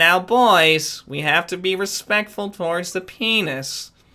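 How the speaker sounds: put-on deliberate, slow lecturing tone with "boys" stretched out. Asked to do the substitute teacher from Beavis and Butt-Head: Beavis and Butt-Head substitute teacher voice. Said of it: "the substitute teacher from Beavis and Butthead".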